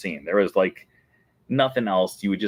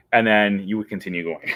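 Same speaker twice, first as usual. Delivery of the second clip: normal talking voice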